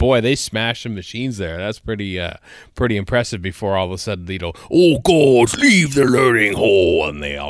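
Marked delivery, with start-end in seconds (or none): 4.7-7.1 slow, loud, drawn-out scary alien voice, commanding. Imitating the Krotons, said to have impressive deep voices: deep Kroton voice. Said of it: "the Crotons are speaking".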